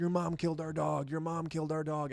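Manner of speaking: high, frantic bloody-murder screaming, over and over. Retelling a dog's death, imitating wife screaming. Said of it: "she started screaming, like".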